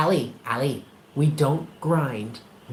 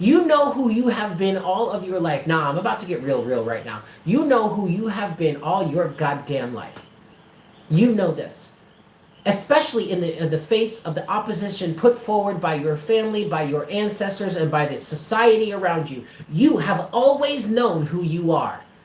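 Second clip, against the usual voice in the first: plain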